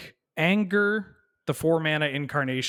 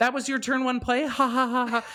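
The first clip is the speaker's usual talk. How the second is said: mocking, giggling monkey voice, higher pitch; 11 semitones higher than usual. Voicing a card monkey that giggles at an opponent: giggling taunting monkey. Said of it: "this monkey just lands and starts giggling at me".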